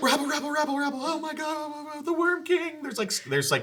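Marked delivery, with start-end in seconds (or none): 0.0-2.8 very high-pitched frantic panicked crowd babble. Voicing gathered commoners as panic spreads: panicked crowd. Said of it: "a panic begins to go through the crowd".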